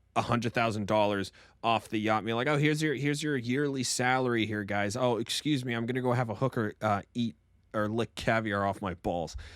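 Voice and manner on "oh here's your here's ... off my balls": smug, arrogant, douchey swagger. Retelling a wealthy character throwing money off a yacht: imitating a douchey tone. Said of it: "he's still got this really douchey".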